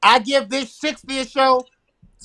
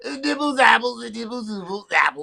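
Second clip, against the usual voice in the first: babbling in a goofy voice; 3 dB quieter than usual. Joking right after noticing he sounds like Bill Cosby: Bill Cosby voice. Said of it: "Why do I sound like Bill Cosby?".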